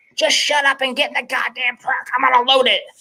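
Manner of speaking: acted, shrill, high-pitched, bossy yell. Recounting a boat trailer mix-up, the speaker quotes his co-angler; imitating a co-angler yelling. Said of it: "my co-angler yells".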